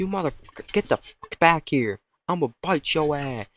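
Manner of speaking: dog character voice. Acting out a barking dog, translated: swearing dog voice. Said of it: "He's like".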